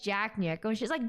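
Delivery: plain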